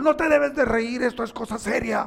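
put-on stern, cross, barking angry tone. Retelling what a person giving instructions said: imitating an angry person. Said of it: "Y estaba enojado".

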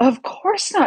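high-pitched shocked exclamation. Narrator reading a story, the bear answers Peter's warning in a very shocked voice. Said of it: "said the bear in a very shocked voice".

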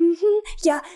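high, fake-cheery, passive-aggressive tone. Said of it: "trying to joke it off".

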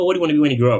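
put-on high, babyish cooing baby-talk tone. Imitating how people ask what you want to be, baby-like tone. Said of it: "they say it in always like this very like baby tone".

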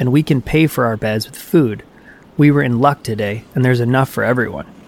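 ordinary delivery

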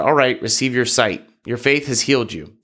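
ordinary delivery

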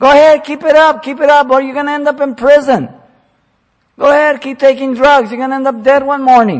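loud, very high, sarcastic goading tone. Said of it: "So he's speaking sarcastic".

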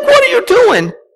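screaming, pitched way up. Retelling a mother's reaction as a cop pulls his gun on her son, imitating someone screaming. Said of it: "she starts screaming".

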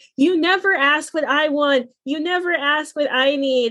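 mock mild yell, half-shouted, kept contained. Retelling a quarrel where one person was screaming: imitating someone screaming. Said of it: "He's just basically screaming".

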